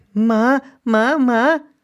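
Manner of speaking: put-on boy yelling loudly, high-pitched. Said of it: "क्यों चिल्ला रहा है?".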